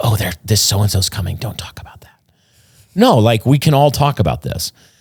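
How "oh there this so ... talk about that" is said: hushed, voiceless, gossipy whisper. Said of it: "no need to whisper".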